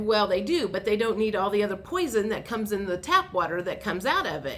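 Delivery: ordinary delivery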